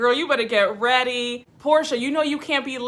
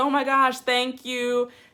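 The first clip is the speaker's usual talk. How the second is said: tearful, crying, overcome voice. Retelling a cast member thanking a friend: imitating someone crying.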